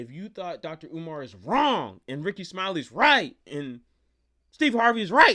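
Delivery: very loud voice breaking upward into cracking high pitch. A host addresses viewers at the end of a video, voice cracking. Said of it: "my voice cracked".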